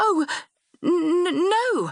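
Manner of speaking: faltering stammer. Anne, taken aback when a man asks her to marry him, answers stammering. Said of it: "I stammered".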